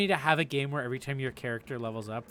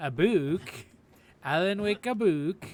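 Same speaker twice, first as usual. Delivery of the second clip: pitched-up put-on Swedish accent; 5 semitones higher than usual. Reading a label aloud while playing, in a Swedish accent. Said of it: "Why am I saying it with a Swedish accent?".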